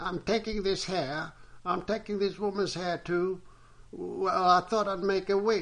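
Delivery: high, breathless, pant-broken, crow-like cawing voice. An old woman answers the servant, in a pant-broken voice like a crow's caw. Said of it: "a pant-broken voice that sounded like the cawing of a crow".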